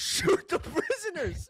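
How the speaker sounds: acted-out shouting. Recounting what a man yelled to the others, retelling a yell. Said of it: "and he yells again".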